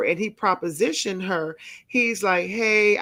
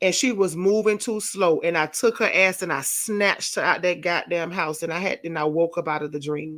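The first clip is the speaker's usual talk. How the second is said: ordinary talk, nothing marked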